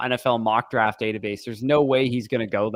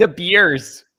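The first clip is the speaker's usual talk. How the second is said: put-on high, loud Canadian accent on "beers"; 7 semitones higher, 8 dB louder than usual. Teasing another speaker's pronunciation of Bears: imitating a Canadian accent. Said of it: "Canadian down. You're like".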